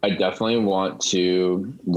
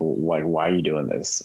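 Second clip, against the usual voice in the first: plain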